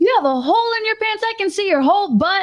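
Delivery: very high, very loud, announcer-like delivery. Retelling a friend's remark about her, saying it very loudly. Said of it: "she like very loudly goes".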